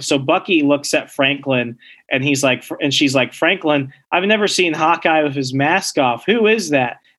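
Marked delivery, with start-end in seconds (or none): none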